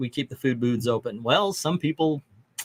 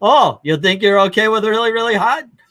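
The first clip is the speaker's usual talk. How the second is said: fake Indian accent, loud, high, challenging tone; 7 semitones higher, 7 dB louder than usual. Retelling what a Mexican restaurant worker said to him: put-on Indian accent. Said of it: "I'm doing an Indian accent for this".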